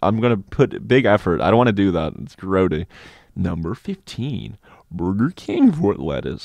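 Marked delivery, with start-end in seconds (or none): 3.3-6.5 put-on, swooping online video narrator voice. After a reading, show the listeners the voice you slipped into halfway through: a YouTube sort of voice. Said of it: "I started doing that YouTube sort of voice".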